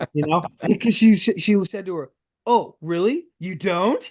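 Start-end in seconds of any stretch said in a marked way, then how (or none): 2.5-4.0 mock-sarcastic, much higher pitch. Recapping a scene where she questions another character, Nala Se's mock sarcasm. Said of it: "She was being sarcastic".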